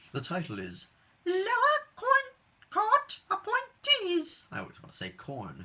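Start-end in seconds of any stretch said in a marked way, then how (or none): 1.2-4.4 very high, loud, very slow sing-song voice. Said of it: "in my high-pitched voice".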